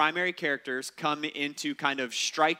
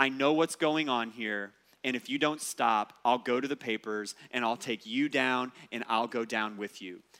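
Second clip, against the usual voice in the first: put-on quiet, intense voice, lower pitch; 4 semitones lower than usual. Retelling a head coach warning the referee, in a quiet, intense voice. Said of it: "he says in this kind of quiet, intense voice".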